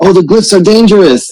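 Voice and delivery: very high, loud shouted yell. The speaker's revived game character calls out to the others, yelling a warning. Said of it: "I'm like yelling out".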